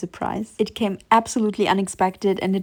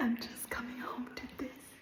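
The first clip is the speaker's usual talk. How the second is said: barely-there hushed whisper, very quiet; 4 semitones higher, 19 dB quieter than usual. Coming home late in a stairwell, not wanting to disturb neighbors: whispering. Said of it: "I had to whisper in the stairwell".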